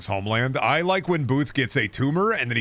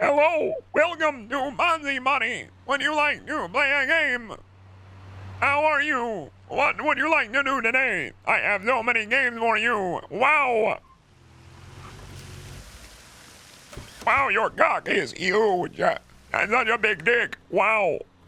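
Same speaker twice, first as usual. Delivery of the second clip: very high-pitched computer-assistant style voice; 13 semitones higher than usual. Acting out an inner Bonzi Buddy as introduced: Bonzi Buddy voice. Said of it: "show his inner Bonzi buddy".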